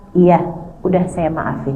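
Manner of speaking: relaxed, gentle, breezy voice. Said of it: "dia begitu mudah mengatakan".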